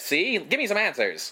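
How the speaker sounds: put-on old-fashioned newsreel announcer voice. Imitating how a movie character talks, in a Terry Lee impression. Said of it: "the most nineteen forties reporter that you can have. Like he talks like this".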